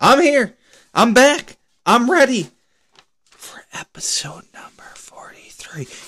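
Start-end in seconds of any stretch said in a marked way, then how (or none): 3.3-5.9 airy, whispered show-host stage whisper. Welcoming the audience back for episode 43, whispering like Joe Biden. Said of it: "I'm whispering like Joe Biden".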